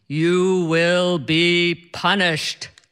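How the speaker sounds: deep, godlike voice. Speaker retells a man teasing them on a flight, deep, godlike voice. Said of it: "says in this deep, godlike voice".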